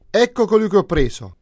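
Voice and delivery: very loud, very high-pitched, proud boastful exclamation. The coward jester enters the hall with his prisoner, a proud exclamation. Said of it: "esclamò fieramente".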